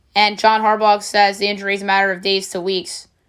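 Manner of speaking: ordinary talk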